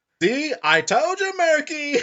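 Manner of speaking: very high, very loud cartoon sidekick voice. Recalling an old cartoon, the speaker mimics one character's line in a cartoon character voice. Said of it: "I'm amazed I can still do that voice".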